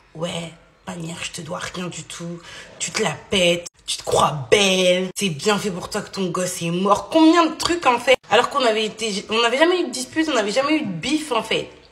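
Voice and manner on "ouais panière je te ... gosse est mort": put-on icy, glacial, murderous, menacing tone. Telling the girls what another woman said, the speaker imitates an icy, murderous tone. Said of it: "elle prend un ton glacial".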